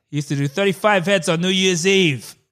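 put-on gruff voice. Telling a fact about Danny DeVito's career, doing a Danny DeVito impression. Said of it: "that wasn't really his voice".

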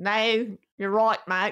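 quick put-on Australian accent. Trading accent attempts with friends, speaker tries an Australian accent. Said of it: "I can do Australia".

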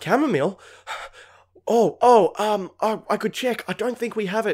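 high, panicked, flustered, stumbling stammer. Retelling the bar worker lacking chamomile tea: imitating a flustered meltdown. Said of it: "he started melting down in front of us".

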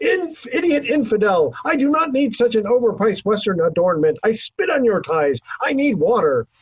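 mock unhinged, frantic, high hysterical outburst. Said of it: "the taliban shouted hysterically".

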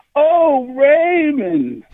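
high, swooping, distressed wail, voice breaking into tears. Recalling a TV mom's distressed cry at retirement news: distressed Ray's mom calling out. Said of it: "she's in distress and she just calls out".

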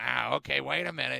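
put-on old person voice. Retelling what a candy-giving neighbor said at the door: imitating an old neighbor's voice. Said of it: "I hate to do the voice".

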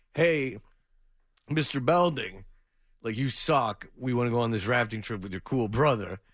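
normal talking voice

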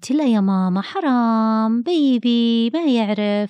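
gentle, loving tone, very slowly drawn out. Showing what parents say when a child hits the baby: soft, tender tone. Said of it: "انتبهي لنبرتي ... لما تكون النبرة فيها حنان بهذا الشكل".

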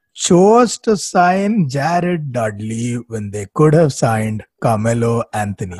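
deliberately slow. Talking about the Lakers' decision, making sure everyone gets it: saying it slowly. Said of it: "I'm going to say this slowly".

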